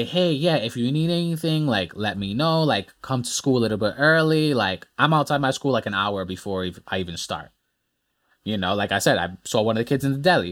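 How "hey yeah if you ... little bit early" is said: plain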